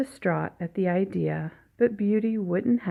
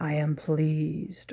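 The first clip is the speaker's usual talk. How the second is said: growling, lower and slower; 3 semitones lower, 3 dB quieter than usual. Narrator reads the Beast's reply to Beauty; growled. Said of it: "growled the Beast".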